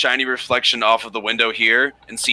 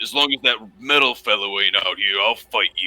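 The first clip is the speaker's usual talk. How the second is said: growling orc voice. Narrating a game scene, the speaker voices the orc Beekman answering Rask, growling. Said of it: "he kind of growls at you".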